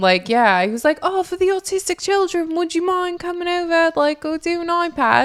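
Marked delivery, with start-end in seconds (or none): 1.0-5.3 high-pitched, put-on Australian accent. Retelling what a street salesman said: imitating an Australian accent. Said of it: "he had an Australian accent".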